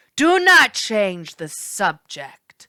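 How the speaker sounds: loud, menacing growled ghost voice, swooping pitch. Narrator reading a ghost's reply to the narrator, growling ghost. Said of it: "the ghost growled".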